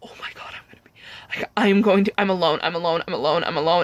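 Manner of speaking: mock panicked, freaking-out spiral of repeating babble. Retelling being lost alone in a haunted house: imitating own panic. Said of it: "And I just started freaking out".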